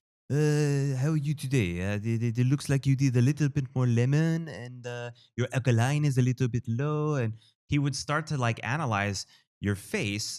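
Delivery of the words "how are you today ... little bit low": put-on speaking with a French accent. Retelling how a man greeted people every day, french accent. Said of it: "with his French accent".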